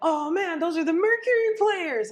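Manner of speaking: very high, loud, acted stoned-guy voice in awe. Retelling what a passerby said about the mural: imitating a stoned man. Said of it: "high out of his mind".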